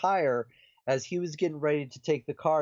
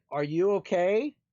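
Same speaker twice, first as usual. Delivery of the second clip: put-on, mild calling out; 4 semitones higher than usual. Retelling calling out into the hallway after a loud bang: retelling own yell. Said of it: "we're both yelling out into the hallway".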